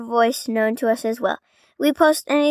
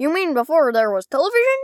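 animated cartoon voice swinging up and down; 3 semitones higher than usual. Acting out a scene from the special: Goofy voice. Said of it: "we do our best impression".

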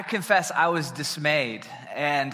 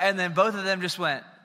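normal talking voice

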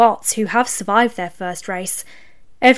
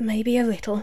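whispered, quieter; 7 dB quieter than usual. Narrating Livewire answering Ferocity when she asks if he is nervous, whispered. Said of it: "he whispered".

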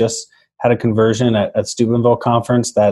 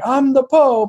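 put-on very high-pitched Italian accent. Retelling a scene where Steve Martin comes out as the Pope, Steve Martin's Italian Pope accent. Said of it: "I know that was an Italian accent".

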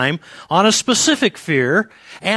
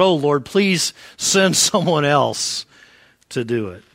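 mock pleading that bursts suddenly out; 5 semitones lower than usual. Retelling Moses' answer to God at the burning bush: imitating a blurted plea. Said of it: "he just blurts out".

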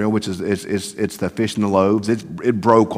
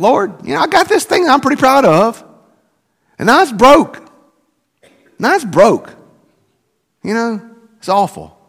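put-on very high, loud, exasperated and frustrated pleading; 5 dB louder than usual. Recounting a prayer in church over something broken, retelling a frustrated prayer. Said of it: "I was just real frustrated".

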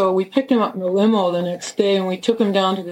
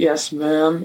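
low, flat, even, expressionless monotone; 4 semitones lower than usual. Describing a cop he met, imitating how the cop talked: monotone 'yes, ma'am'. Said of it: "like monotone".

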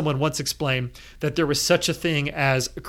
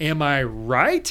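"right" climbing hard, strong rise at the end. Suggesting a conversation opener about Jim, question in the tone: rise on right. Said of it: "Emphasis on the question in the tone".

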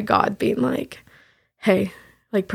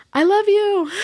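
very high, acted-out, screamed cry; 10 semitones higher than usual. Retelling a goodbye through a door, imitating someone screaming. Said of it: "he just screamed".

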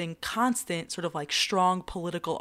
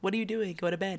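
ordinary delivery

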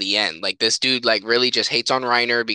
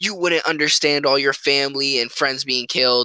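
mock, contained, mild yell; 3 semitones higher than usual. Retelling an anime scene where Sasuke yells at his teacher: Sasuke yelling. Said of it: "Sasuke just yells at him".

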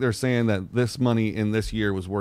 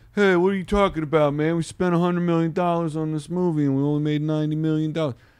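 dumb-sounding voice, New York gangster twang, pitched higher; 6 semitones higher than usual. Explaining how studios cook the books, doing a dumb studio executive voice. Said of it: "That was dumb studio executive voice".

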